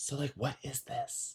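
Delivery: whispered, hushed, very quiet, barely audible. Retelling asking a man at brunch a question, whispering. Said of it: "I'm whispering like".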